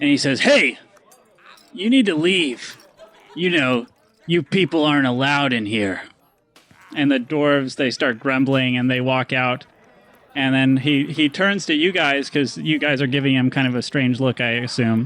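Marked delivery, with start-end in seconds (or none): 0.4-6.0 gruff, rough half-orc barkeep voice. Voicing a half-orc barkeep who tells dwarves to leave: gruff half-orc barkeep voice. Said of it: "he's kind of a gruff-looking half-orc".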